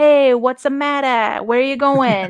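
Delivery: put-on movie gangster, mobster-style tough-guy voice. Describing the voices he does, demonstrating his mobster-style voice. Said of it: "he does the like mobster style voice".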